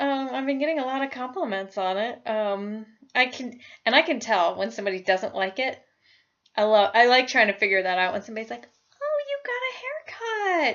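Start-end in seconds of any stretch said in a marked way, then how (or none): 9.0-10.7 careful, very high-pitched voice, drawn-out. Imitating someone commenting on a new haircut: imitating a voice gone higher. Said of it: "When their voice gets higher like that".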